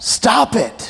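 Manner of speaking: loud, high-pitched yelling. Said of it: "Newhart just keeps yelling at him".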